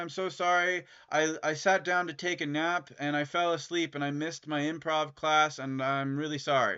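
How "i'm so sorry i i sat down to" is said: plain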